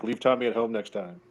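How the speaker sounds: low, hushed, half-whispered aside. Acting out what Maddie was seen half-whispering, retelling a half-whisper. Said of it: "you can see Maddie here whispering like".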